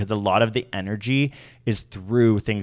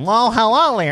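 mock nerdy professor voice, higher and louder; 7 dB louder than usual. Imitating how every professor greets someone: imitating a nerdy professor voice. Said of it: "why do you sound like a nerd?".

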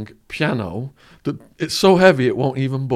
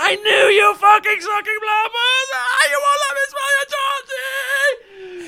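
very high, sobbing, screaming, drawn-out crying wail. Retelling how his wife ended up: imitating a woman screaming and crying. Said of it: "she just starts screaming and crying and going".

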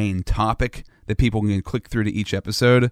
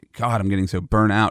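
ordinary talk, nothing marked

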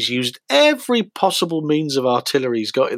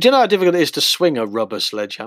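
plain

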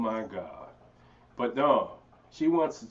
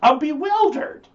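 high, loud mock-panicked innocence. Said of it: "That's how I talk to the cops".

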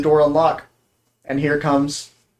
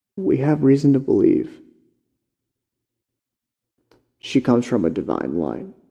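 careful, deliberate stage whisper; 3 semitones lower than usual. Voicing a character who leans in close to avoid being overheard: half-whispering carefully. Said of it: "he whispers so carefully".

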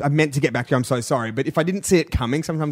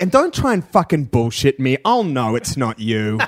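imitated accusing tone; 3 semitones lower than usual. Acting out a man warning off pretenders: imitating an accusatory tone. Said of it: "there's an accusatory note of that too".

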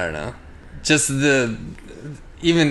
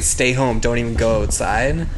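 ordinary talk

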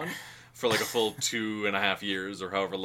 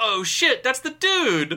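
mock very high, loud, thrilled swooping exclamation; 13 semitones higher, 8 dB louder than usual. Recounting a theater audience member's outburst during a movie, acting out really excited. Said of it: "really excitedly went".

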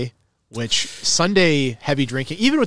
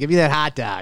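put-on nasal Buffalo accent. Talking summer foods and hot dogs, mimicking the accent: nasal Buffalo accent. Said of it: "That buffalo nasal accent".

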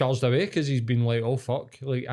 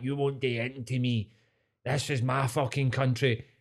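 mock drunk Scottish man's voice. Retelling a scuffle between strangers, imitating a drunk scottish man. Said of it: "a pissed up old Scottish guy".

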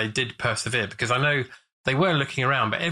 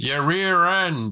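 fake American accent, pitched up; 5 semitones higher, 3 dB louder than usual. Retelling a scene, answering a driver's question in a put-on American accent. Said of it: "Roger puts on an American accent".

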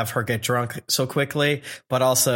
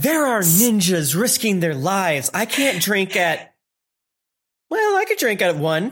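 mock, tipsy-sounding put-on voice. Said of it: "Tsunade going like".

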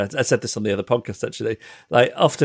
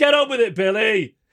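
acted-out rowdy drunk heckler shout; 11 semitones higher than usual. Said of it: "drunk men just yelling out things like".

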